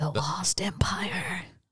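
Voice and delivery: ominous, hushed, evil villain stage whisper. Finishing the title of the next movie on the list: mock evil whisper.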